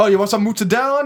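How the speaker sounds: put-on loud, high-pitched Italian accent. Retelling how the italian family offers food: imitating italian family's accent. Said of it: "And they're like".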